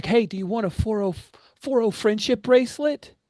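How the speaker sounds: put-on loud, very high-pitched New Jersey accent. Play someone who doesn't look local offering something to Crucible, in a Jersey accent. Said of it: "they have a Jersey accent".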